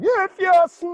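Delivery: very loud, high-pitched yell at full blast. Retelling how someone acted like The Rock: yelling like The Rock. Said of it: "wanted to act like The Rock and start yelling".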